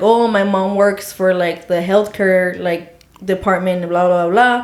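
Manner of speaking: ordinary talk, nothing marked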